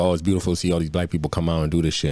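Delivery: ordinary talk, nothing marked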